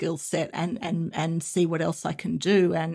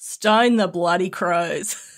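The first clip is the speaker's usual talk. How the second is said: slow, real Australian accent; 7 dB louder than usual. Quoting an Australian expression to the other speaker, in his best real Aussie accent. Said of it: "I've done my best real Aussie accent".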